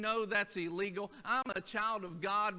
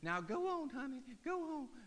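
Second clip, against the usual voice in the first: high, ladylike put-on lady voice; 5 semitones higher, 7 dB quieter than usual. Retelling a woman's words to a dog following her, in a lady voice. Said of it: "And like my lady voice".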